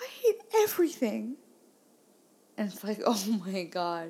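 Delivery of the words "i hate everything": put-on very high, tearful, bawling wail. Retelling the child breaking down as they pull into the driveway, imitating her crying. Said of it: "She starts crying".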